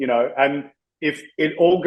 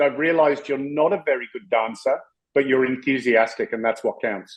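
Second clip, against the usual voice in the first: usual speaking voice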